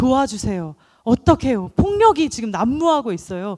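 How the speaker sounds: loud, pleading cry.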